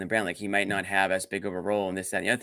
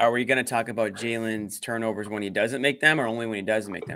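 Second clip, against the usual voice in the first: ordinary talk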